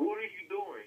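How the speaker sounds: put-on voice of an angry coach yelling. Acting out a coach confronting a player after a mistake: imitating Coach Saban yelling. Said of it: "and you're Coach Saban".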